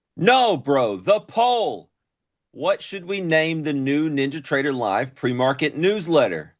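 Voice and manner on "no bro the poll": very slow, fed-up, exasperated yelling. On a stream, clarifying to the other speaker that he means the poll, exasperated yelling. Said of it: "why are you yelling at me?".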